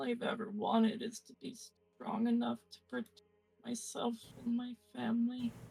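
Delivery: high, weak, fading voice. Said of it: "she's gonna say".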